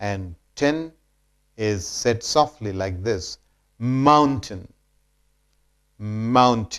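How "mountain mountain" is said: mountain, first syllable stressed. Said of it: "more stress is laid on mound".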